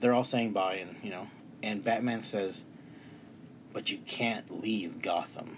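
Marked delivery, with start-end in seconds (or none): 3.7-5.6 slow, ominous, menacing, scary tone. Recounting a movie scene as the characters say goodbye: quoting Batman in a scary tone. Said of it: "In a really scary tone".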